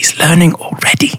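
quiet whispered aside. As he walks out, Aiko speaks to her, whispering. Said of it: "Aiko just like whispers to her".

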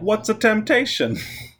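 puzzled, confused voice.

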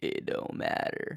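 low, slow, voiceless hushed murmur. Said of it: "I can't speak in a low voice that loudly".

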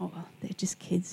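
put-on soft tone. Retelling how a screaming woman answered the speaker's apology; imitating a suddenly softened tone. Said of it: "she changed her tone of voice".

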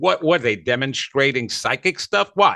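normal talking voice

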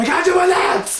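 put-on squealing, very high-pitched scream. Quoting a favorite movie scene, imitating Teddy screaming. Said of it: "when he's screaming".

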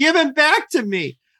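mock, very high, desperate pleading scream. Recapping a scene where a character pleads with another, imitating Melissa's pleading scream. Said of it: "pleading with Devereaux and then screams".

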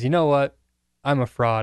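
plain

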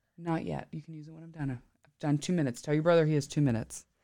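quiet hushed voice.

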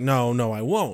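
normal talking voice

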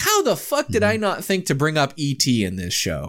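ordinary talk, nothing marked

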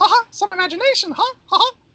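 very high, loud, squeaky cartoon mouse voice.

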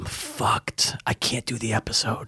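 lost, hoarse voice. Telling the co-host they can't do the episode: lost voice, hoarse. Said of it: "I think I lost my voice".

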